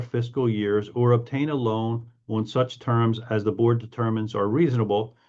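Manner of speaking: usual speaking voice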